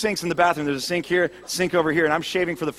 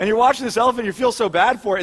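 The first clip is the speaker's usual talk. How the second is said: usual speaking voice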